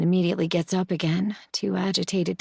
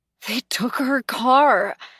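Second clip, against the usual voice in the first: raspy, hoarse, high, raised voice; 5 semitones higher, 5 dB louder than usual. Reading a novel aloud, a character reveals news: hoarse rasp. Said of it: "she says in a hoarse rasp".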